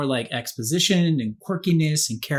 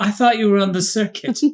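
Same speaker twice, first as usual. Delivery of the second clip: put-on slightest hint of British accent, pitched up; 6 semitones higher, 4 dB louder than usual. Speaker imitates a man's accent, faintly british accent. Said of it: "trying to have that accent that he had".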